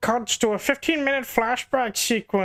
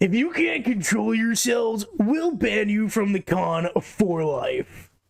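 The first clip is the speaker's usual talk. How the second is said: voice of a big lumbering monster. Playing the baby cop in a bit, using a monstrous voice. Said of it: "give a child like that monstrous voice".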